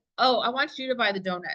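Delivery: ordinary talk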